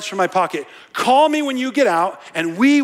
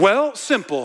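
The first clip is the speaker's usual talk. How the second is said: normal talking voice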